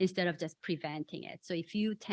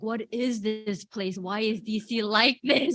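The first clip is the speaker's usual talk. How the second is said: put-on loud, drawn-out, tearful weepy crying; 3 semitones higher, 6 dB louder than usual. Retelling how tourists with allergies come in crying: imitating tourists crying. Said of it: "and crying, like".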